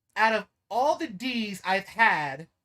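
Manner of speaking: put-on stupid girl voice. Retelling what one of the girls said, mocking a girl's stupid voice. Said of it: "I put on her stupid ass voice".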